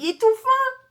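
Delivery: delighted high-pitched laughing squeal.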